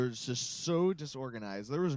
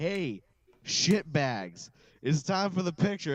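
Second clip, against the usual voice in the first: mock, loud yelled call-out; 4 semitones higher, 6 dB louder than usual. Retelling calling everyone over for a group picture, retelling a yell. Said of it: "I'm yelling out".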